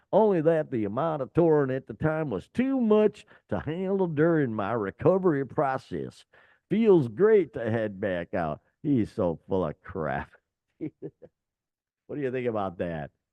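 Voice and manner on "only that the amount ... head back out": imitated Southern US accent. Reading out a vocalist's quoted reply to listeners, in a put-on southern accent. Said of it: "I give it a southern accent".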